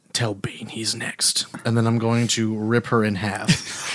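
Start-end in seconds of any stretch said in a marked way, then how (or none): 0.2-1.5 menacing, threatening whisper, breathy and hushed. Voicing a character who leans in to an enemy's ear: whispering a threat. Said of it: "I'm gonna whisper into her ear".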